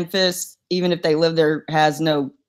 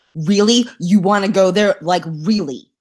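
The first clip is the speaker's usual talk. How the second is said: angry, fed-up, pissed-off, challenging voice; 2 semitones higher than usual. Showing how she talks when she starts getting pissed off: showing her pissed-off voice. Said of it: "I start getting pissed off, and all of a sudden I'm talking like this".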